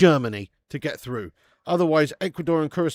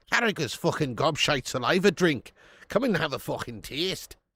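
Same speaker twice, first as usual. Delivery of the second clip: sudden slip into a put-on Irish accent. Joking about a beer brand while chatting: irish accent. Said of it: "Don't know why I turned Irish there".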